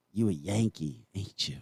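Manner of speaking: slow, blunt, challenging tone. Retelling a stranger in Tulsa confronting him: imitating a Tulsa local. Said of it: "some guy came up to me and he goes".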